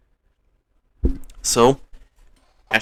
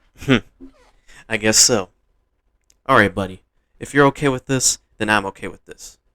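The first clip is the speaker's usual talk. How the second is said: plain reading voice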